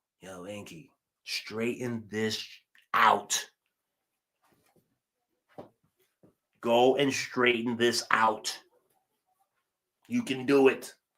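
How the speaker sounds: voiced stage half-whisper in full voice. Retelling what Shu half-whispers to him, urging him on: imitating Shu half-whispering. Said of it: "He's whispering to me".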